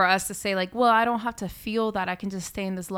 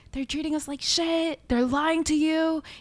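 high, screaming outburst; 8 semitones higher than usual. Retelling what a man screamed at them about the others: retelling a scream. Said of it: "And he was screaming".

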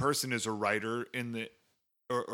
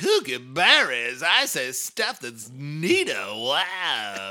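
loud, swooping, flamboyant villain voice, stretched "wow"; 3 semitones higher, 9 dB louder than usual. Describing an actor's flamboyant bad-guy movie role, the speaker mimics him: John Travolta flamboyant villain voice. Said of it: "play like a kind of flamboyant, outlandish bad guy".

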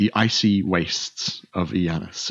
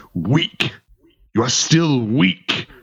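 high lion voice growling out words; 5 semitones higher, 3 dB louder than usual. A narrator voices a huge lion pinning the listener down, growling lion voice. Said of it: "and it growls".

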